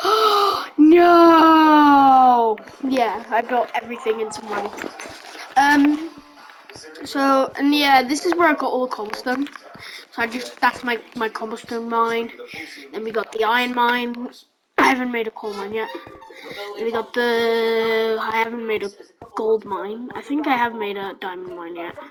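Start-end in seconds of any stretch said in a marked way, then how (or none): 0.0-2.6 high, loud, horrified cry. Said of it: "she's like".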